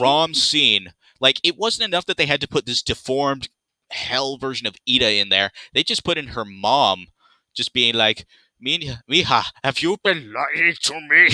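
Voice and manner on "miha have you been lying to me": creepy, slow, drawn-out, pitched-up demon voice. Retelling a Grom scene, voicing Ida's mom in a demonic voice. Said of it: "With that demonic voice".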